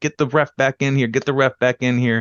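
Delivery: mock frantic, insistent yelling, yet easy. Retelling a wrestling match, wrestler yelling at Kofi: imitating someone yelling. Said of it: "yelling at Kofi".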